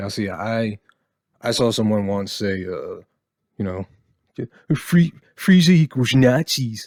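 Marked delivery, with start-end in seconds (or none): 4.8-6.9 very loud, high, grating, irritating put-on whine. Quoting someone he once saw whose view irritates him: mocking irritating put-on voice. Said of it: "I'm using that voice for people like that because fucking irritate me, and it's that's a that just sounds like the voice of an irritating person".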